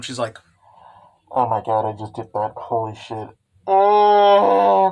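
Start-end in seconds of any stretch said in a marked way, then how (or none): 1.3-4.9 mock heavy horrified dread, loud, slow, long drawn oh. Retelling Skasa-chan's reaction beside the broken machine: acting out Skasa-chan's grim dread. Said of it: "she's absolutely grim".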